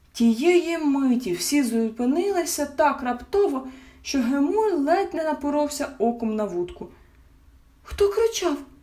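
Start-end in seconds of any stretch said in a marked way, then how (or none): 7.8-8.5 high, startled, frightened and alarmed voice. The mother asks about a wild shout in the forest, alarmed. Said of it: "переполошилась мама".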